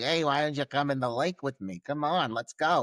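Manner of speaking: put-on thick Italian accent. Retelling how a man coaxes a woman into the lake: imitating a thick Italian accent. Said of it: "he's got this really thick".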